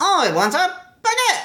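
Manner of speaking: very high, nasal, grating put-on voice. Retelling what a character said when she came in: terrible impersonation of a grating voice.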